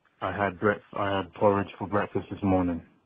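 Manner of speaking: low, flat, dead-level monotone with no variation. Showing how a monotone guy says he had porridge: flat monotone. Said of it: "a monotone guy would be like, ... it just sounds flat".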